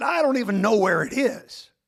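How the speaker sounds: gruff-voiced speech. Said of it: "he had that r-, gruff voice".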